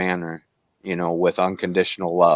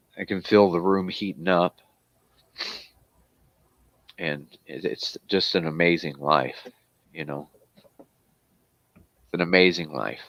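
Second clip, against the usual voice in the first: emotional, choked up, close to tears; 3 dB quieter than usual. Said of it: "I get emotional when I".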